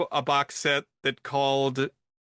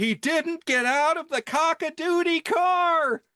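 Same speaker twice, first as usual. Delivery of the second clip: shrill theatrical shout, very high, word car stretched long; 13 semitones higher than usual. Retelling a movie scene where a character yells in a theater: imitating Kathy Bates yelling. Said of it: "I stood up in the theater and I yelled".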